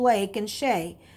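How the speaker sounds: ordinary delivery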